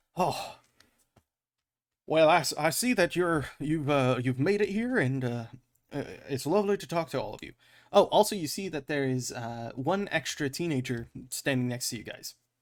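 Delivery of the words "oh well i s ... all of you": put-on Southern US accent, stammering. Voicing a nervous mayor greeting the party: southern voice for the mayor. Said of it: "now that I have given him the southern voice".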